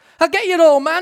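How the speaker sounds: giddy, shrill, very high and very loud. A tearful mother runs into the yard calling after an old man; almost giddy with emotion. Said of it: "almost giddy with emotion".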